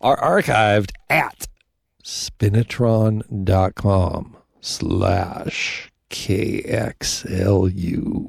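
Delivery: very slow, deliberate, nice and slow spelling out.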